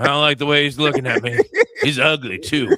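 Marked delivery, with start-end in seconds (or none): none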